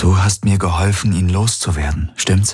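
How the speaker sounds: ordinary delivery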